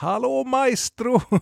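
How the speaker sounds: very high, slow, drawn-out shout.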